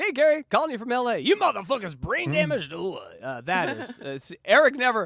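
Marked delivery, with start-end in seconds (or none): 0.0-3.2 full-throttle, amped, high-energy, pitched-up delivery. Imitating a voicemail just played, with high energy: imitating Riley's high-energy voicemail. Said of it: "Eric never calls with that amount of energy".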